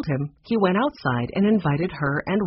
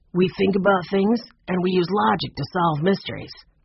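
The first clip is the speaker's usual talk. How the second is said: usual speaking voice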